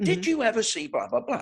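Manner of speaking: mock very high, keen, eager tone. Retelling how a judge questioned a witness: imitating a judge really into questioning. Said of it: "she was really into it".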